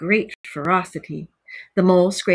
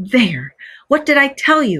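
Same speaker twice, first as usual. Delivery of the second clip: exclaiming in raised pitch; 5 semitones higher, 4 dB louder than usual. Narrator reads the rat to the mole after digging up a doormat, exclaiming. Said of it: "exclaimed the rat".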